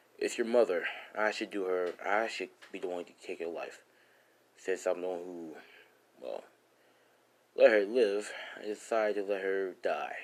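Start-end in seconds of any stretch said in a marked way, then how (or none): none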